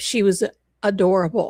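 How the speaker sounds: plain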